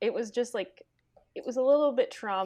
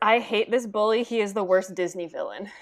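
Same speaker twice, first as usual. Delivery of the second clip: ordinary talk, nothing marked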